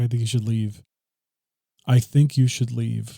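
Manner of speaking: put-on very upset voice. Retelling a movie scene where she rolls over: imitating someone very upset. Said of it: "she's very upset".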